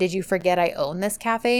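normal talking voice

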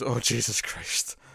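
whispered, sighing groan. Retelling a scene where a character reacts to an interruption: sighing, imitating Greer. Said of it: "Greer just sort of sighs and goes".

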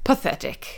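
breathy, hushed, quiet British detective voice. Retelling what a man standing on a tripwire said, British Sherlock voice. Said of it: "In British Sherlock voice".

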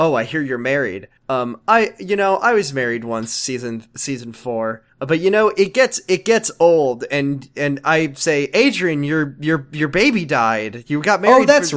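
ordinary delivery

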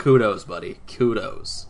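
ordinary delivery

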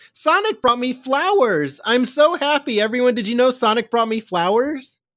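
very high, shrill, loud yell. Recapping a sonic episode, acting out a character's reaction to flowers, imitating a loud yell. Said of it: "just loudly yells".

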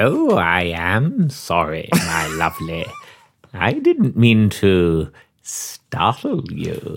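eerie, unsettling, creepy low-pitched character voice. In an acted scene, a character greets someone who rang the bell: creepy voice. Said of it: "You've got that voice perfect".

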